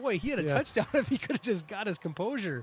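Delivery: high, loud laughter running through the words. Calling a fullback's stumbling run, laughing while talking. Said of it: "I'm sorry that I'm laughing".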